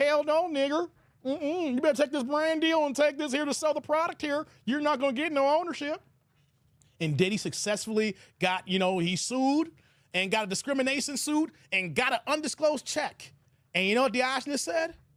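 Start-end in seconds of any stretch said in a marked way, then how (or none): 0.0-6.0 imitated, fake country accent. Retelling a company's answer to a request for ownership, in a put-on country accent. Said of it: "they use a country accent".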